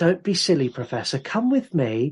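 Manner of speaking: mock superior, patronizing, condescending know-it-all tone. Retelling a horror film scene, imitating a patronizing student. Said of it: "the most patronizing asshole of a student going".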